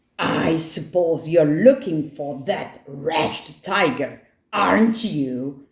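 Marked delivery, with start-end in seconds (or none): none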